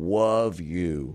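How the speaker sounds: cartoonish put-on character voice. Describing how a man sometimes says it, the speaker repeats it in Elmer Fudd voice. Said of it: "like Elmer Fudd".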